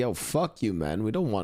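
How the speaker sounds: put-on defiant, dismissive tone. Retelling how the colonists answered the british: retelling a defiant retort. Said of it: "we were just like".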